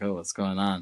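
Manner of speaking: plain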